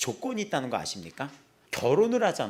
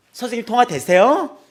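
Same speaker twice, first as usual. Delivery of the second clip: odd, strange-sounding intonation; 8 semitones higher, 13 dB louder than usual. Retelling a mother's call after a bad test: imitating a mother's strange intonation. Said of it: "이상해, 억양이".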